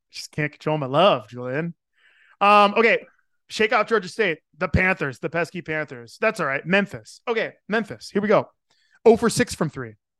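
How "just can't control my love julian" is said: ordinary talk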